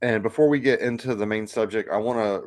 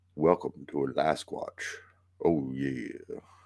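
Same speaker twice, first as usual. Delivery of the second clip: slow, drawn-out, lingering put-on host voice savouring words; 7 semitones lower, 7 dB quieter than usual.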